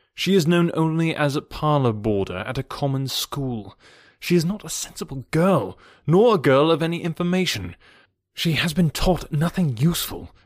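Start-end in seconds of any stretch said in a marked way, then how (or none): none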